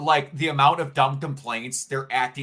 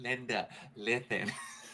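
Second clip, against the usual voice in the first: put-on lisping kid voice, quieter; 12 dB quieter than usual. Retelling how an ex impersonated a kid: imitating a kid's voice with a lisp. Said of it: "I don't know why I gave that kid a lisp".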